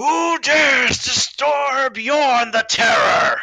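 very high-pitched, yelling battle cry. Retelling a character charging downstairs with swords drawn, yelling as Yorn the Terror. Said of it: "he yells so he goes".

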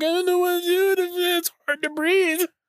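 words sobbed out in mock bawling, very high. Recapping a video, the speaker mimics a woman fifteen minutes later: imitating someone bawling. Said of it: "she's just bawling".

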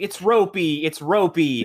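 very slow, dragged-out, high, loud screaming cry. Retelling a comedy bit where he keeps calling to his wife: imitating someone screaming. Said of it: "he just keeps screaming to his wife".

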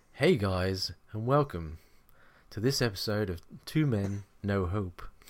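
acted vintage radio presenter voice.

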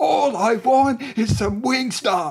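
drawn-out exasperated yell, very high and very loud. Describing a fed-up woman in a car and acting out her line: imitating a woman yelling. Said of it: "she's yelling".

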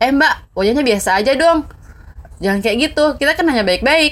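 play-acted, blunt, high, angry scolding tone. Acting out an older sibling confronting a woman face to face, imitating Ali angrily confronting. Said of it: "langsung ngelabrak di depan muka kayak gini".

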